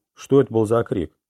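ordinary delivery

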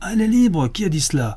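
high-pitched yelling shout. Prayou, holding Pascal as the crowd listens, shouts back: shouting. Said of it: "cria Prayou".

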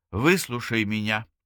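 ordinary delivery

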